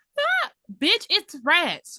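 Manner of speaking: long, slowly drawn-out, swooping, high, loud scream. Retelling a scene where a character screams in a tunnel: imitating a scream. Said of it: "Why the fuck are you screaming?".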